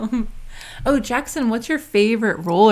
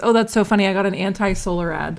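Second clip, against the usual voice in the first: ordinary talk, nothing marked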